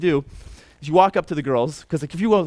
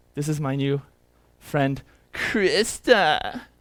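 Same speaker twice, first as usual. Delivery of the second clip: put-on mocking tone. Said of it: "kind of mocking".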